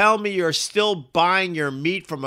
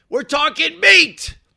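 high, loud, belted-out excitement. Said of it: "You can hear the excitement in my voice".

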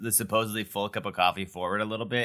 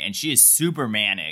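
normal talking voice

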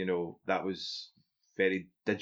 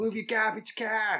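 put-on Boston accent, pitched high; 13 semitones higher than usual. Joking about Boston accents: Bill Burr Boston accent. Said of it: "That was my Bill Burr impression. Because he's from Boston".

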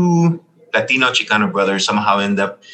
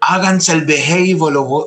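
put-on scream, higher pitch; 7 semitones higher than usual. Retelling a tired mother at a laundromat scolding her kids: imitating a mother screaming. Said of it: "she screams out at the top of her lungs".

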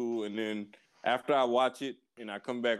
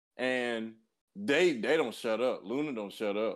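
ordinary delivery

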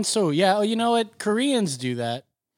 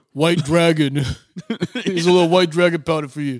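exaggerated put-on New York accent, louder; 5 dB louder than usual. Joking about rewrites in a Sylvester Stallone impression. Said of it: "your Stallone is just like".

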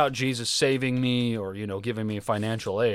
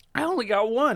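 goofy cartoon slacker voice, much higher pitch; 12 semitones higher than usual. Asked how many shark tattoos he has, answering in a Shaggy voice. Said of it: "Why did you sound like Shaggy?".

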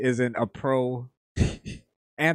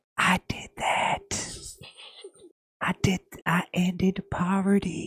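put-on creepy whisper, higher; 7 semitones higher than usual. Adding a creepy whisper to a Joe Biden impression. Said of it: "the creepy whisper".

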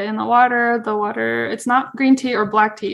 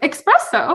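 put-on confident, self-assured voice, pitched up; 6 semitones higher than usual. Retelling answering a husband's question about the word: imitating a confident answer. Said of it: "Just confidently".

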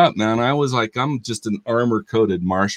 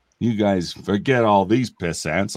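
Western cowboy drawl; 3 semitones lower than usual. Showing off a pretty good impression: John Wayne voice. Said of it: "I do a pretty good John Wayne".

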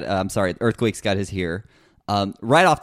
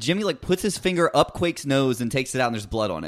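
usual speaking voice

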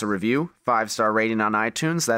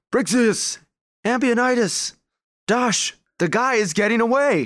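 yelling, voice very high and shrill; 13 semitones higher, 3 dB louder than usual. Voicing Revan running into the firelight with bow drawn: Revan yelling.

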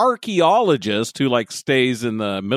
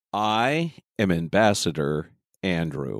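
very low, steady, even, soothing, calming tone; 8 semitones lower, 4 dB quieter than usual. Co-host introducing themselves on a Star Trek podcast, in an even, calming voice. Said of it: "an even, moderate, calming voice".

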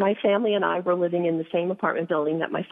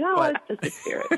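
put-on very high, offhand, nonchalant, blasé tone; 12 semitones higher than usual. Imitating another speaker explaining a spirit follows him: imitating a blasé remark. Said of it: "So blasé, he says that".

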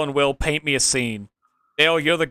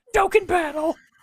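very high, pitched-way-up impersonation voice. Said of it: "that's my Marge impersonation".

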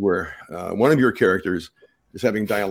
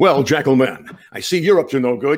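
pitched-up, brave cartoon hero voice; 5 semitones higher, 4 dB louder than usual. Voice actor showing how he would voice both characters straight through, Lion-O voice. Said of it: "instead of doing all the Lion-O".

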